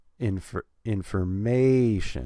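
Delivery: information slowed, loud stress on MA. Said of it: "we're gonna put stress on the third syllable".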